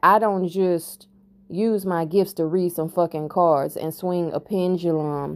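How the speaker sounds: usual speaking voice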